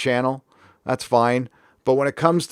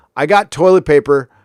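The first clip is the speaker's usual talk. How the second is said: ordinary talk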